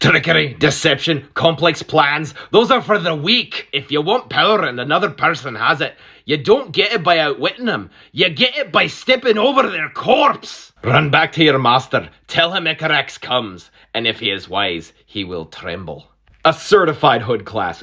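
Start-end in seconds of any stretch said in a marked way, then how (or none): 0.0-16.1 not-so-good, put-on Scottish accent. Reading out a quoted character's speech in a not-so-good Scottish accent. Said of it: "My Scottish accent isn't even that good".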